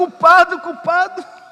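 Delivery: put-on shout. Retelling a man running through chicago streets: imitating someone shouting.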